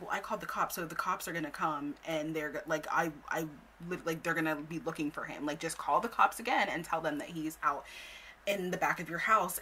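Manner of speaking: ordinary talk, nothing marked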